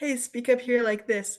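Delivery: bright, high-pitched, coaxing demonstration voice. Demonstrating how people are encouraged to speak up, in a brighter, higher voice. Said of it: "wants a brighter and higher voice".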